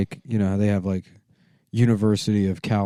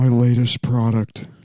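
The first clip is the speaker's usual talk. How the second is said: put-on talking-dog voice, higher and louder; 3 semitones higher, 5 dB louder than usual. Imitating Elizabeth Holmes from the Theranos show: Elizabeth Holmes impression. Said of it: "She talks like this".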